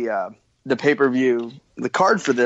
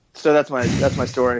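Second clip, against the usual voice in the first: ordinary delivery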